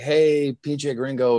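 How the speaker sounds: high, long, very slow, stretched-out acted yell. Retelling a fan calling out in a queue: imitating someone yelling. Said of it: "he yelled something like".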